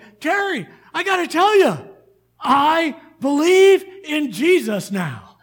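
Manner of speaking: mock very loud, thrilled outburst, swooping pitch. Retelling a neighbour's news after heart surgery: imitating someone excited. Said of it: "all excited".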